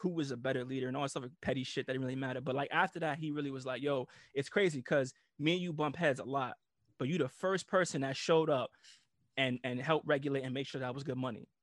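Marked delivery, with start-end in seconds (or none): none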